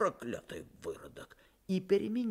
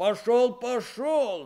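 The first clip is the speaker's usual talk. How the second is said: called out, high-pitched; 5 semitones higher than usual. A narrator reads the blacksmith driving Chub off before slamming the door, shouting. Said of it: "закричал кузнец".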